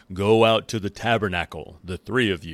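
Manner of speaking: loud, fatherly daddy voice. Retelling a scripture passage, God summoning Moses, Aaron and Miriam, daddy voice. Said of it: "he's using his daddy voice right now".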